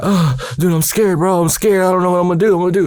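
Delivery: mock scared, high-pitched, panicked freaking-out voice. Retelling being scared while his big brother told him to shut up, retelling freaking out. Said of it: "And I'm like freaking out".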